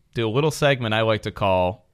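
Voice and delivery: ordinary talk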